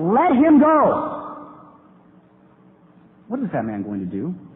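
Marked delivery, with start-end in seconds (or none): 0.0-1.2 very high, slow, loud yell. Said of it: "And so he yells to the man".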